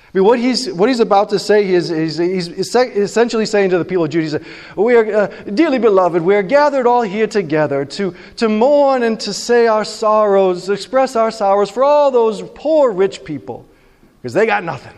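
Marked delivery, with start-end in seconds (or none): 4.8-14.8 super sarcastic delivery in a sermon-like style. Paraphrasing a prophet's mocking eulogy for people on the wrong path: imitating a sarcastic mocking eulogy. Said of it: "So it's super sarcastic".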